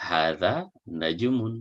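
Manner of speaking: plain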